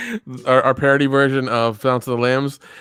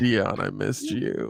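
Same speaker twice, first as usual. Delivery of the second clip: mock whispering, quieter; 3 semitones lower, 9 dB quieter than usual. Imagining a friend's too-long hug at a wedding, imitating a whisper. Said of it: "He's gonna whisper in your ear and he's gonna be like".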